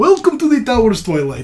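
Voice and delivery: welcoming, swooping, put-on Russian accent. Voicing a character welcoming the players, in a Russian accent. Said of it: "My Russian is much better".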